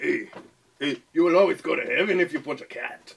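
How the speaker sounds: borrowed Mexican accent. Doing voice impressions, copying the other speaker's put-on mexican accent. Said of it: "I have your Mexican stuck in my head".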